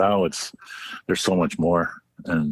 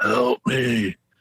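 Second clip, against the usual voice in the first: eerie, spooky, creepy, pitched-up call; 6 semitones higher than usual. Retelling a hike, mimicking a voice answering from the lake: imitating a low creepy voice. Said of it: "a real low, creepy".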